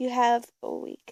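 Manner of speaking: ordinary talk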